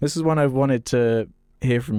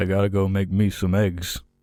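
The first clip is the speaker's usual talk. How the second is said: low put-on American accent, for show; 4 semitones lower than usual. Asked to say the line like an American, trying an American accent. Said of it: "say it like an American".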